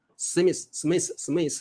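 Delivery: Taiwanese-accented pronunciation. Showing a listener how people in Taiwan say Smith, fast Taiwanese-style 'Smith'. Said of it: "我们台湾都这样念哦".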